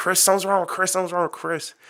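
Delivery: urgent, high-pitched, alarmed screaming. Retelling a lady at the lunch table calling out: imitating someone screaming. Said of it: "she started screaming, like".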